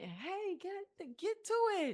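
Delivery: loud cheering yell. Retelling cheering for a daughter's team at games: imitating own cheering yell. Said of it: "I'm screaming, I'm yelling".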